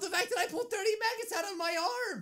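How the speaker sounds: high, mocking, imitated put-on voice.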